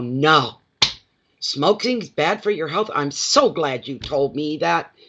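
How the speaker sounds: thick, pointed, genuinely sarcastic tone. Showing how they would answer someone who criticizes them: sarcastic. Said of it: "I can be real sarcastic and go".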